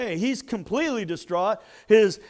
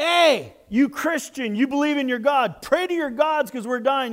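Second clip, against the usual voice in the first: urgent put-on yell, only slightly raised; 3 semitones higher than usual. Retelling a starving ship captain calling for prayer: imitating a yell. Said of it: "yells out and says".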